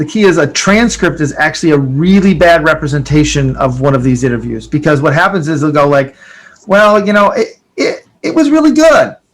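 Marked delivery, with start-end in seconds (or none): 6.7-9.1 hesitant, doubtful, halting, slightly higher pitch. Showing how an interviewee sounds when something is not right: hesitant, unconvinced. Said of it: "You can imply from the way they said it that there's something not right".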